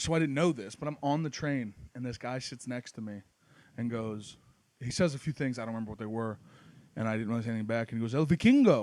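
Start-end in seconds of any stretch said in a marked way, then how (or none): 8.1-8.8 loud, high voice speaking Spanish. Retelling how a man on the train called him a Viking: imitating a Spanish guy. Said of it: "the Spanish guy who called me a Viking in Spanish".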